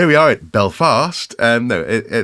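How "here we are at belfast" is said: delivered in a field reporter style. After stumbling over saying Stirling, joking about sounding like a reporter: BBC News reporter voice. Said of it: "I sounded like a B B C News reporter".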